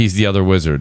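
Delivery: ordinary delivery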